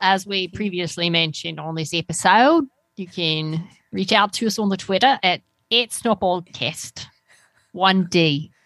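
put-on New Zealand accent. A podcast host gives the show's Twitter handle, in a Kiwi accent. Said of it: "why were you holding out on us with your Kiwi accent?".

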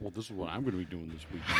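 super proud, showing-off tone. Retelling what he said about his weekend plans: imitating someone super proud. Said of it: "super proud".

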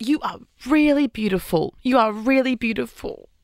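fond, proud, admiring fatherly dad tone. Retelling what Jimmy's dad said on meeting Brooke: imitating Noel as a proud dad. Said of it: "in, like, a proud dad way to her".

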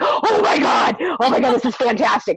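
acted-out excited panic, freaking out. Retelling their reaction when a question about Victor came up, retelling freaking out. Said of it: "I'm like freaking out".

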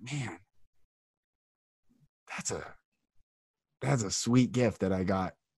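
voice thick with emotion. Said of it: "And I get choked up right now".

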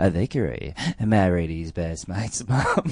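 very slow, peculiar, drawn-out drawl. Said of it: "in a real kind of, uh, distinctive style".

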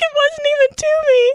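very high, tearful, weepy sobbing voice. Retelling how someone cried reading a birthday card to the speaker, imitating someone crying. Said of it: "And she's like crying".

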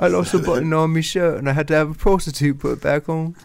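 put-on high Cockney accent. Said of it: "You sound like a Cockney bootblack".

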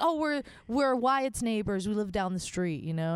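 normal talking voice

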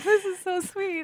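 very high, tearful voice, talking through tears. Watching a family's photo story being shown, crying while talking. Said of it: "I'm like crying right now".

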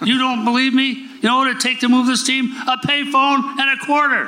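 mock very high-pitched, loud, furious screaming rage. Retelling how he answered a media question: imitating own past scream. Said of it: "screaming at this guy".

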